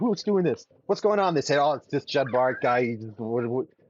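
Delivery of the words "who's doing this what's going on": irate, angry king voice, pitched up. Retelling a story where the king's palanquin shakes, mock-angry king. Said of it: "He's all angry".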